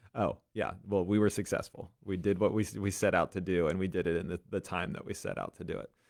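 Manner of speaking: normal talking voice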